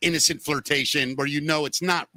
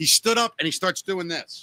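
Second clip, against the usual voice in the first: ordinary delivery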